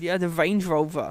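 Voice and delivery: thick put-on Dutch accent. The speaker quotes a rich uncle, thick Dutch accent. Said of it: "he's got a very thick Dutch accent".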